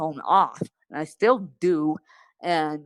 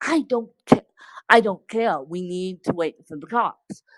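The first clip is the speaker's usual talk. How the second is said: mock full scream with a stumbling start; 2 semitones higher than usual. Retelling what dad screamed after a car accident: imitating dad screaming. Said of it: "I remember my dad screaming".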